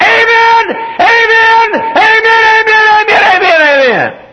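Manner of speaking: little, very high voice, loud shouted amens. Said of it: "one little voice went".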